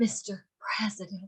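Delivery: put-on breathy voice. Explaining kinds of tonality, demonstrate the breathy one with a breathy Marilyn Monroe voice. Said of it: "her tonality would be more breathy".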